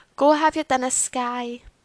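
mocking, teasing voice. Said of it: "In that voice".

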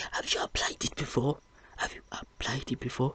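high, whispered, put-on fatherly lecturing voice.

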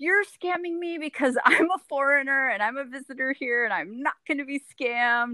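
accusing, high-pitched yelling. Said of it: "yelling into him".

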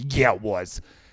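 low, angry dad voice, retorting tone. Retelling a sports broadcast, quoting the other announcer; imitating an angry dad. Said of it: "He just sounded like that angry dad sitting at".

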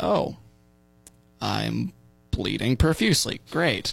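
put-on thick, swooping, heavily ironic sarcasm. Recalling standing up after an injury and looking at it, retelling a sarcastic remark. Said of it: "I'm always a very sarcastic person".

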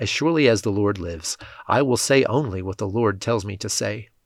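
ordinary delivery

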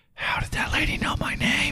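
hushed, leaning-in whisper, as if into an ear. Retelling how Eric leaned down and whispered a question: imitating Eric's whisper. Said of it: "whispers in my ear".

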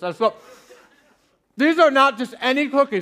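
chewing mid-sentence, talking through a stuffed mouth. Tasting cookies for the audience, speaking with mouth full. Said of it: "I'm speaking with my mouth full".

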